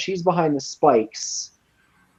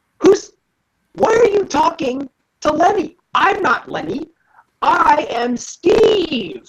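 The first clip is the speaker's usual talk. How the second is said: shouting kobold voice. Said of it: "stops for a second and yells".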